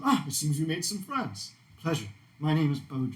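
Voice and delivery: elegant dandy character voice. Voicing a dwarf dressed like a dandy greeting the party: Baudrillard voice. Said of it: "and he says".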